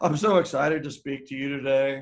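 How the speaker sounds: put-on flat unenthusiastic voice. Imitating a speaker on stage who claims excitement: imitating an unenthusiastic speaker. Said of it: "you see a speaker go up to the stage and they're like".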